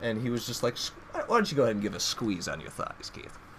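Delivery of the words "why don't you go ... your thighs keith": hushed, soft, breathy near-whisper. Retelling what a doctor told him, imitating Doctor Rogers. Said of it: "I'm doing the best impression of this guy".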